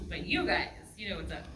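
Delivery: ordinary talk, nothing marked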